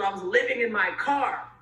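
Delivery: ordinary talk, nothing marked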